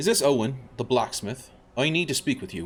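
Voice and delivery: clumsy, very bad fake Irish accent. Role-playing your character, calling on the blacksmith, in a very bad Irish accent. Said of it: "I'm doing a very bad Irish accent for my character".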